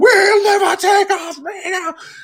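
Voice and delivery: play-acted excited battle cry, very high and loud. Showing listeners how he starts up when he gets excited, imitating Jay Stang all excited. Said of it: "when he gets all excited and starts doing the whole".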